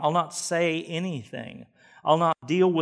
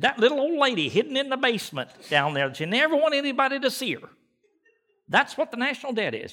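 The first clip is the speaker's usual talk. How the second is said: put-on rough voice, pitched higher; 8 semitones higher than usual. Quoting a presidential candidate on the national debt: Ross Perot impression. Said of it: "I'm not very good at that".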